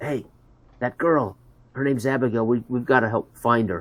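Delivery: hushed half-whisper, close up. Voicing a character who urges a companion to help find a girl: half-whispering in character. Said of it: "and I whisper in his ear".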